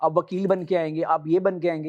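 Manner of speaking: ordinary delivery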